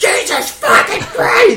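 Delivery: high, slow, shocked, panicked shout.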